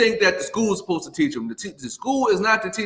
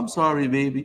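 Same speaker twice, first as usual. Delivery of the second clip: put-on elderly woman's manner of speech; 4 semitones lower than usual. Retelling what an old lady at the bus stop said: imitating an old lady's way of talking. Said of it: "You know how old people talk".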